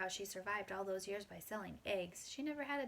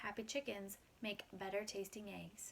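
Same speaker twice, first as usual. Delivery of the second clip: ordinary delivery, nothing marked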